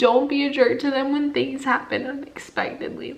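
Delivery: tearful, close to crying. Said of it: "I'm over crying".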